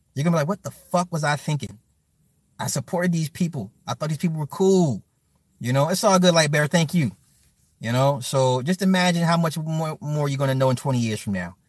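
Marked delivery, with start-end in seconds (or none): none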